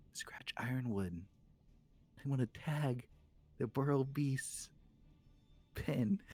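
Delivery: conspiratorial, confidential, hushed delivery. A character leans in very close to ask for something, hushed tone. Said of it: "in a hushed tone".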